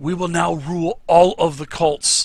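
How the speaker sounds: loud, booming, high ringing declamatory voice. In a cavern beside two bodies, a figure makes his announcement, speaking really loud. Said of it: "he speaks really loud".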